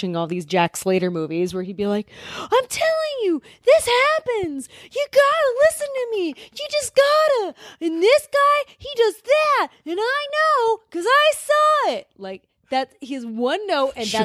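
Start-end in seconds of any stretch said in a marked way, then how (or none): 2.4-12.1 put-on very high, slow, drawn-out, earnest insistent kid voice. Describing a character from the Jack Slater movies, doing an impression of him. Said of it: "That's a really good impression of him".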